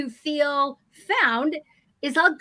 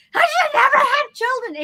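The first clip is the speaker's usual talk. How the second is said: acted very high, loud, overwhelmed shrieking wail; 11 semitones higher, 6 dB louder than usual. Telling a story about a baby's mess and its mother, imitating a screaming woman. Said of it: "And she's just screaming".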